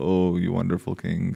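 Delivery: ordinary delivery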